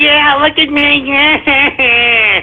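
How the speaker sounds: drawn-out, very slow, mocking taunt. Retelling the trolls bragging after scolding them: mocking imitation of the trolls. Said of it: "You're like".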